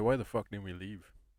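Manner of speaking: plain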